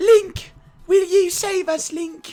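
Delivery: put-on British accent. Joining in on how Zelda talks in Breath of the Wild: Zelda's British accent. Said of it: "British accent".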